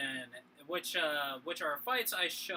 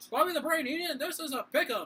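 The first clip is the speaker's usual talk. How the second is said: put-on old-timey wrestling announcer voice, higher and louder; 11 semitones higher, 6 dB louder than usual. Imitating what a wrestling announcer would say about the fight: Gorilla Monsoon announcer voice. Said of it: "good o-, old-timey announcer voice".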